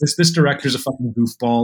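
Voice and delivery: cynical, contemptuous, dismissive, scoffing tone. Imitating a viewer who rolls their eyes at the movie: imitating a dismissive viewer.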